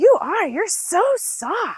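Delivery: put-on high, very slow, awed little kid voice.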